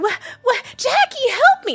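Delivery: mocking helpless, dumb movie damsel in distress voice. Mocking how the women in the movies act: imitating a helpless movie heroine. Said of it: "Just like".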